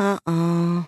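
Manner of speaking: muttered under the breath. Judy hears her parents announce the aquarium sleepover and reacts under her breath. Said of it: "Judy said under her breath".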